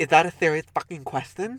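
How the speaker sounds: put-on little lisp. Retelling what a man said to a question: imitating a little lisp. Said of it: "he's got a little lisp".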